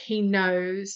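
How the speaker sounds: usual speaking voice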